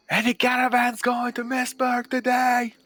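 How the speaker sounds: very high, loud, stretched-out hollering yell. Playing a character asking the street about caravans: yelling out loud. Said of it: "I yelled".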